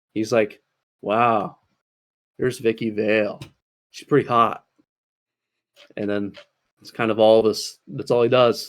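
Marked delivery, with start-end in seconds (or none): 1.0-4.6 play-acted casual, unbothered, offhand delivery. Reviewing a Batman movie, mimicking Bruce Wayne: put-on nonchalant Bruce Wayne voice. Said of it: "He's just very nonchalant".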